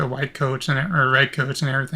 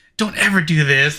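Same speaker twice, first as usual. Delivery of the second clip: mock overly intense commercial voice, louder; 4 dB louder than usual. Mocking an anti-piracy commercial's warning: imitating an overly intense commercial. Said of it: "There's no reason for it to be so intense".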